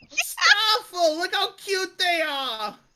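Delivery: put-on very high, loud, swooping old-lady New York accent. Voicing an old lady giving candy to little kids, old lady New York accent. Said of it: "old lady and New York accent".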